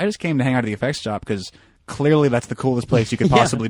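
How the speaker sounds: usual speaking voice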